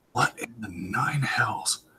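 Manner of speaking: muttering under breath. Narrator voices a woman looking towards the sea, muttering under her breath. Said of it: "she mutters under her breath".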